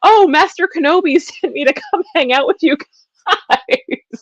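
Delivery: winded, breathless, eager, very high and loud, acted. Retelling a cartoon scene, imitating Ahsoka running up breathless. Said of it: "Ahsoka comes running up breathless".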